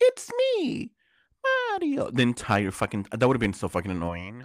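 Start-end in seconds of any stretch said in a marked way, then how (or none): 0.0-2.1 very high-pitched voice. Mocking how the original voice would have sounded all film: original Mario voice. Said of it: "the original guy for, like, an, an hour and a half just going".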